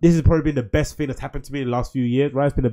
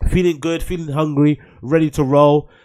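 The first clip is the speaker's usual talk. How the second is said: normal talking voice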